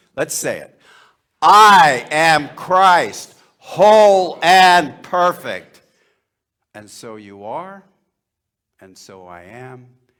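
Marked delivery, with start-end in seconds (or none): 1.5-5.8 zealous, vehement, very loud delivery. Leading a group in a spoken affirmation: said vehemently. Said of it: "Can you say this vehemently?".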